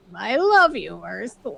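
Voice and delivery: acted nasally voice. Imitating someone's voice the way the shrink did it: little nasally voice. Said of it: "little nasally".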